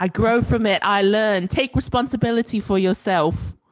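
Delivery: put-on British accent. Trying out a British accent on quoted lines, praised by the listener; British accent. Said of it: "you sound so good".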